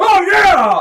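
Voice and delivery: very high, very loud cheering whoop. Voicing someone in a rat fight who cheers: cheering shout.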